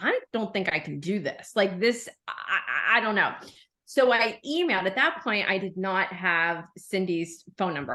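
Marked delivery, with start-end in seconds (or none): 0.0-3.3 put-on panicked voice. Retelling an earlier moment while planning a trip: retelling own panic. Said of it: "I was panicking".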